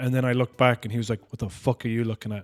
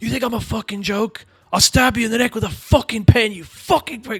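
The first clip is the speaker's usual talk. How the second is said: very high, screeching scream; 10 semitones higher than usual. Recounting a woman who screamed at them, the speaker is retelling a woman screaming. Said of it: "she started screaming at me".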